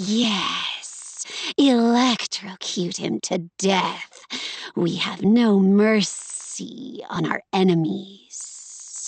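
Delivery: spitty, wet, hissing sibilant s sounds. An audiobook narrator voices a character's line, with spitty, hissed S's. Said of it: "You can hear the spit in in the back of those S's".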